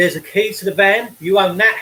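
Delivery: ordinary delivery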